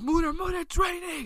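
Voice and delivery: put-on wild, frantic, very high-pitched crazy yelling. Retelling warning someone about the rain: retelling a crazy yell. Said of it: "I was yelling like that crazy".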